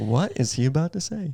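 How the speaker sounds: eager, keenly interested, curious tone. Retelling how a friend reacted to the question: imitating Seb, eagerly curious. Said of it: "he's just interested".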